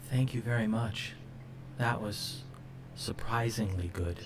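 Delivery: hushed, very soft, near-whispered speech. Narrator voices Talnor, the tall one, kneeling to set his bowl down, in a very soft voice. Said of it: "says in this very soft voice".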